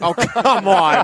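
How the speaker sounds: slow, laughing, protesting tone.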